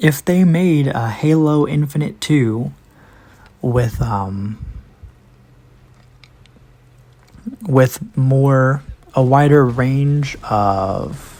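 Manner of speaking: slow, halting, stumbling stutter with restarts. Speaking without a script about a possible Halo Infinite sequel, stuttering. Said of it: "I'm stuttering here".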